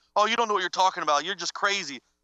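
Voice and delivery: ordinary talk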